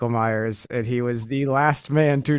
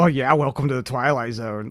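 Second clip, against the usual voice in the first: mock delivery, dripping with sarcasm. Recapping a horror movie, the speaker quotes a character's reply, mock real sarcastic. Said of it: "Like real sarcastic".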